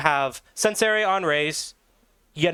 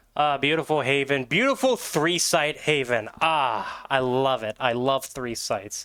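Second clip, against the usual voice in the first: dripping sarcasm with mock delight and enthusiasm; 2 semitones lower than usual. Reacting to the next map being announced as haven: sarcastic. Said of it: "Can you tell my sarcasm?".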